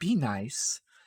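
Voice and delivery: barely audible, very quiet hushed whisper. Playing Rain, who quietly warns a companion at a family meeting: very quiet whisper. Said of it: "Rain's gonna very whisper, whisper very, very quietly".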